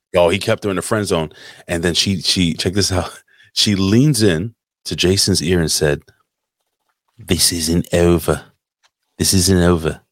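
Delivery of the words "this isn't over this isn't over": slow, drawn-out put-on Australian accent. Retelling what she said into a man's ear, in an attempted Australian accent. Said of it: "I'm trying to do a fucking, you know, an Australian accent".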